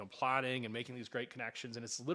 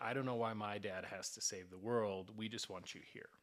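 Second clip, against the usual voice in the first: put-on tearful voice, quieter; 3 semitones lower, 5 dB quieter than usual. Retelling what the oldest son said at dinner: imitating a tearful son. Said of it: "with a tear in his eye".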